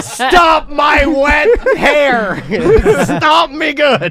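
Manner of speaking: mock shout, high, loud, slow, full of laughter.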